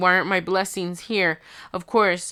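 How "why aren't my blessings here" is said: normal talking voice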